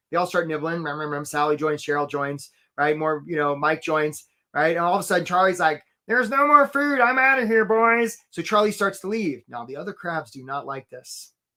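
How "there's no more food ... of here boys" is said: high, pitched-up, silly crab character voice. Telling a story about crabs, the speaker voices Charlie the crab. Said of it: "I don't know why Charlie talks like that".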